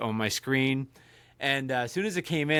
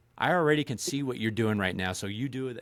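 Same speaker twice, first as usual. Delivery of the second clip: put-on, menacing, threatening voice. Retelling telling off a scam caller, imitating a menacing tone.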